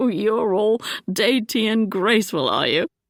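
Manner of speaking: speaking through laughter. Reading a romance aloud, the duke mocking through laughter: laughing while talking. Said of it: "He laughed even harder".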